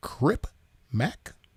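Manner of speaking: phrase said with rising, question-like pitch. Correcting yourself, show that he didn't say it as a period, imitating his questioning tone. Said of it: "His was a question".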